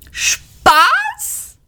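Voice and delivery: shrill, very high screech. Arthur answers Ford's remark, shrieking. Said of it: "kreischte Arthur".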